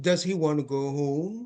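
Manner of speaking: pitch climbing upward on the word home. Intonation lesson example question, with rising intonation on home. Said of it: "rising intonation, right? ... Going up".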